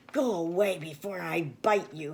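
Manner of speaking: growling, snarling voice like a big dog. A big dog confronts a visitor at the door, growling dog voice. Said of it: "he growled".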